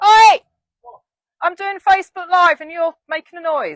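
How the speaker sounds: very loud, shrill, high-pitched shout. Mid facebook live, calling out to someone working up a ladder: shouting at someone. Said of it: "I'm going to shout at him".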